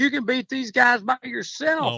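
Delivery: very loud, high-pitched shout. Telling a golf story, repeating what another golfer called out, retelling a loud remark. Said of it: "And then he goes real loud".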